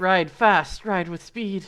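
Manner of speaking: loud, slow, booming wizard-like proclamation. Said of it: "mockingly act like Gandalf".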